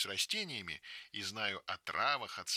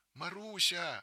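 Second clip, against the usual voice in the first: trembling, quavering voice, much higher pitch; 8 semitones higher than usual. Narrator reads Verochka, walking behind in the forest, calling Marusya in a trembling voice. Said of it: "дрожащим голосом".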